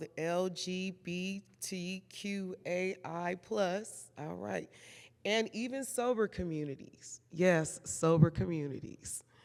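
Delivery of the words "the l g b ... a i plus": each letter spelled out very slowly and deliberately. Listing the communities that culture includes: saying it slowly. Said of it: "I have to say this slow".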